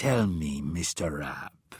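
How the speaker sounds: very slow, low, conspiratorial hiss. Narrating a scene, one man grips another's hand and asks in a hissed, conspiratorial tone. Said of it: "hissed Morrow in a conspiratorial tone".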